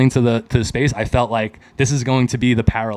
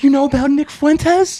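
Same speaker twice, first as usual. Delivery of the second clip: put-on very high, squeaky little-girl voice; 4 dB louder than usual. Retelling own excited question to a friend: retelling own words like a little girl. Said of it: "Like a little girl".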